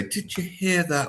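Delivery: mock contemptuous scorn. Imitating a defense lawyer addressing the jury: imitating a withering voice. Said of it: "talk in this withering voice".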